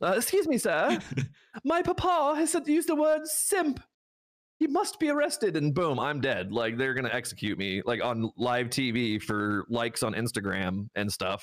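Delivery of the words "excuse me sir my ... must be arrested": very high-pitched mock English accent. Imagining a uniformed man on the phone reporting the speaker, in an english accent. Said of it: "I don't know why he has an English accent".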